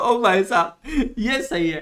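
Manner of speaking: loud laughing exclamation.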